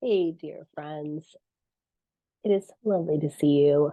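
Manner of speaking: wonky, sick-sounding voice. Greeting friends while sick with covid: wonky voice from illness. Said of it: "my voice is a little wonky".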